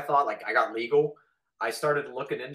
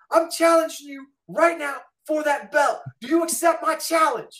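shrill, very high, furious angry yelled scream; 13 semitones higher, 4 dB louder than usual. Recounting confronting a kid about his belt, retelling screaming at a kid. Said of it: "I'm like".

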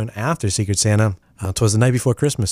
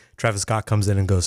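ordinary talk, nothing marked

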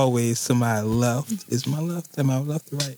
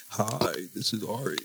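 low, very slow put-on sexy voice, seductive purr; 4 semitones lower, 9 dB quieter than usual. Showing listeners the voice for the mic, in a put-on sexy voice. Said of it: "So you got to get your sexy voice like".

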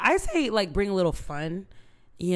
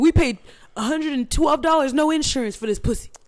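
high, loud mocking voice. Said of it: "They said".

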